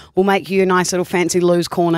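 plain

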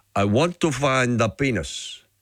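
put-on Mexican-accented English. Telling a story about a man in Mexico, the speaker quotes him in a Mexican accent. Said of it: "in that beautiful Mexican accent".

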